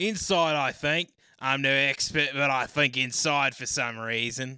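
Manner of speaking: loud Australian accent. Speaker, discussing an australian term with another speaker, answers in an australian accent. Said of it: "in my down under accent".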